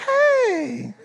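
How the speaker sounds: sudden switch to very high, sugary sweet voice. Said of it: "she'd be like".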